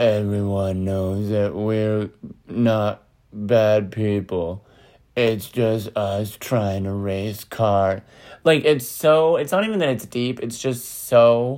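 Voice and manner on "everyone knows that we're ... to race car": slow, dragging, drawn-out action-movie trailer narrator voice. Imitating the narration of a Fast and the Furious trailer: Vin Diesel impression. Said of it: "what does Vin Diesel even sound?".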